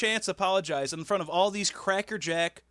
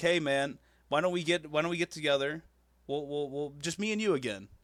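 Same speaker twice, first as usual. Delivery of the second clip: usual speaking voice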